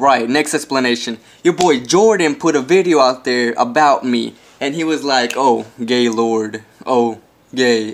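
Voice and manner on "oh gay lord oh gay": play-acted mournful voice, very slow and drawn out. Retelling a video that someone made about the speaker: imitating someone sounding sad. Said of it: "And he sounded really sad".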